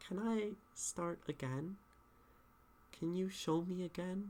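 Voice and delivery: hesitant, doubtful, unsure voice. Showing students how a poem line can sound: unsure. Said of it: "You can be unsure".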